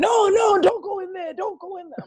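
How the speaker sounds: mock, very high, loud yelling. Retelling a mother yelling at the screen in the cinema: imitating mom yelling at screen. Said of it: "yelling in the cinema at the screen".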